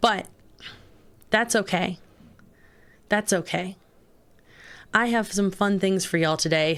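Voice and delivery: worn-out hoarse voice. Greeting the stream viewers with a worn-out hoarse voice. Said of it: "my poor little voice is just dead".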